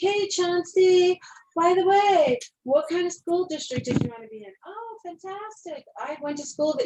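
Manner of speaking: sing-songy chatty voice.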